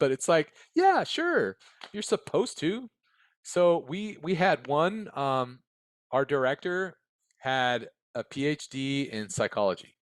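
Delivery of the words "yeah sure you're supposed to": high-pitched, sarcastic tone. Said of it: "I'm not being facetious".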